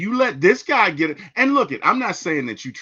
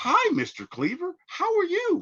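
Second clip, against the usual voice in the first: very high, slow, overly polite fawning voice; 14 semitones higher, 4 dB quieter than usual. Explaining a sitcom character who acts polite around adults: Eddie Haskell ass-kisser voice. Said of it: "He was like this obnoxious ass kisser".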